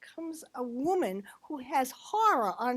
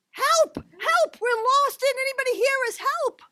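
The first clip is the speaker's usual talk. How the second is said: frantic, shrill, very high, loud panicked shouting; 12 semitones higher, 10 dB louder than usual. Retelling how lost adults called out in the woods: imitating panicked adults shouting for help. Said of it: "And they panicked".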